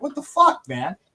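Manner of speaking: mock high, exasperated telling-off. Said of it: "I gave him an earful".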